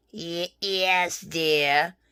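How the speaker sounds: raspy, scratchy voice with stammering. Reading a story aloud, the voice from the bedroom answers in a scratchy voice. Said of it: "came a scratchy voice".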